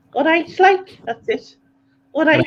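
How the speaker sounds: high, light, put-on Scouse accent. Doing a little bit of an accent for others: put-on scouse accent. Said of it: "a little bit of Scouse".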